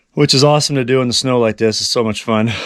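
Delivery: ordinary delivery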